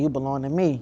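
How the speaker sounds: put-on deep low voice. Retelling a dream where a face spoke: imitating a deep voice. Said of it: "it was a deep voice".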